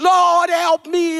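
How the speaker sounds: frantic, desperate, high-pitched screaming. Preaching that believers needn't cry out: imitating someone screaming.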